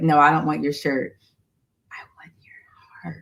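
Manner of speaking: soft, hushed, barely voiced whisper. Retelling what he said about wanting her heart: imitating him whispering. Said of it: "Why you whisper like that?".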